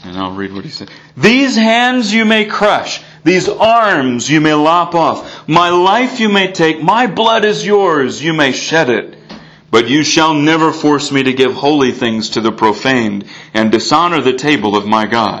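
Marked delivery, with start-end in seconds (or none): 1.2-15.4 loud, ringing, proclaiming voice. Reading aloud the pastor's words as a group charges the table, loud proclaiming call. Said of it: "he calls out in a loud voice".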